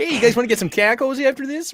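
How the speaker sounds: put-on Fargo accent. Playing a character during a game with friends, Fargo accent. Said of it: "He's got a Fargo accent".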